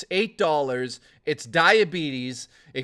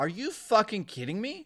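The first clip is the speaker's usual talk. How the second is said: plain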